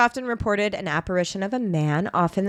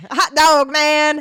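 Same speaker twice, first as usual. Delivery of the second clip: loud, high-pitched fake American Southern accent; 7 semitones higher, 8 dB louder than usual. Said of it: "we're really good at doing Southern accents".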